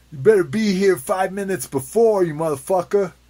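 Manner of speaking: very loud, shrill, horribly fake Italian accent. Joking about a man's wife scolding him, horribly racist Italian accent. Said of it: "that's my horribly racist Italian accent".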